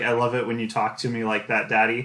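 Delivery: ordinary delivery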